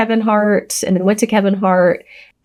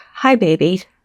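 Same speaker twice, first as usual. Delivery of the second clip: gentle, tender voice. Retelling a greeting while crossing the street: imitating speaking really soft. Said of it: "really soft".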